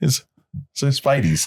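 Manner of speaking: put-on Boston accent slipping out. In a two-person chat, Boston accent coming out. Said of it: "that Boston accent comes out".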